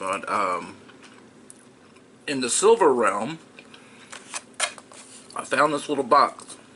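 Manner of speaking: speaking while chewing, mouth full of candy. Eating a piece of candy while speaking, talking with mouth full. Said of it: "pardon me for talking my mouth full".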